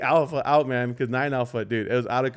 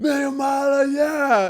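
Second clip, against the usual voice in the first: put-on drunk yell, higher and louder; 14 semitones higher, 4 dB louder than usual. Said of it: "The dude's yelling right in our faces".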